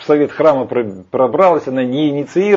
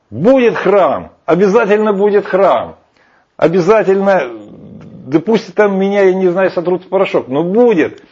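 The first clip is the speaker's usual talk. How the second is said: mock-furious, fuming, enraged outburst, pitched up; 5 semitones higher than usual. Retelling a past outburst, acting out an enraged shout. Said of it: "И я так рассверепел, сказал".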